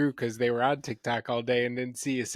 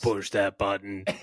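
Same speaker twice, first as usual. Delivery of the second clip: mechanical robot voice; 4 semitones lower than usual. Quoting the commercial seen most often, in a robot voice. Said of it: "That was my robot voice".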